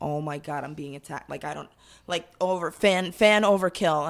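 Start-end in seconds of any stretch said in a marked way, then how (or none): 0.0-1.3 mock alarmed, frightened voice. Retelling being jumped on by a fan: retelling own alarmed reaction. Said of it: "And I was like".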